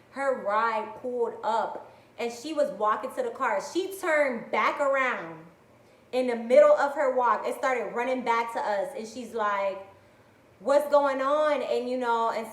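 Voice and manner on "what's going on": put-on frantic, alarmed, loud panicked tone. Retelling a coworker running back during gunshots: imitating someone panicking. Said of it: "she's panicking".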